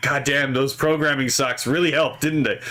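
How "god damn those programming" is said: usual speaking voice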